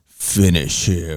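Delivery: very low, eerie, ominous announcer voice. Retelling a fight between two characters, ominous voice. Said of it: "you hear this ominous voice".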